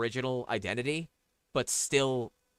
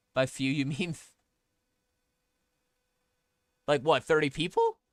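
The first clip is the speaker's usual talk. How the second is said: voice breaking, cracking hard; 3 semitones higher than usual. Asking someone how many they mean, voice cracking. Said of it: "My voice just cracked hard".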